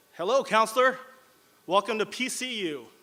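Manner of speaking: slow, eager, enthusiastic welcoming tone, acted out. Retelling the dean's greeting in the hallway: enthusiastic, imitating Dean William Lewis. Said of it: "in his usual enthusiastic voice said".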